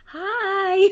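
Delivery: very high, squeaky voice. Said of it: "Like, in a super high voice".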